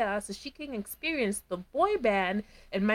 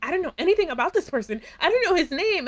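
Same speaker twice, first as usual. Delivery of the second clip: distressed, upset, spiraling outburst in raised high voice; 7 semitones higher, 5 dB louder than usual. Retelling what a woman said when she started spiraling, imitating someone getting upset. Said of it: "She gets upset and she's like".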